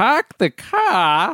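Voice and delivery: high, taken-aback, surprised echoing tone. Replying in a scene to a partner's request, surprised. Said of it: "why are you saying it like you're so surprised?".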